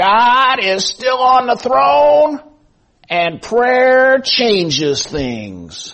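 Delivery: put-on shrill crackling elderly voice. Recalling how an old man started his radio broadcast every day, in an old crackly voice. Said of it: "say in his old crackly voice".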